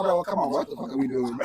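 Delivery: plain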